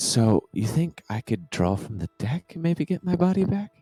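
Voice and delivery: whispered voice. Running a game scene, voicing Maggie to a rider: Maggie whispering in ear. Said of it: "Maggie kind of whispers in your ear".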